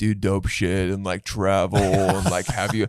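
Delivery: mocking douchey voice. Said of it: "so you had a douchebag voice".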